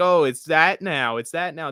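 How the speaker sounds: ordinary delivery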